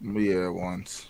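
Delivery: low, not too excited voice. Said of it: "Don't sound too excited there".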